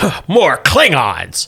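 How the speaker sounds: alien character voice. Narrating a scene where a voice speaks behind the players: Romulan voice. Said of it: "there's a Romulan".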